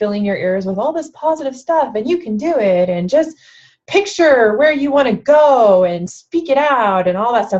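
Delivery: put-on, teasing, somewhat sarcastic tone. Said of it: "I'm talking, like, kinda sarcastic".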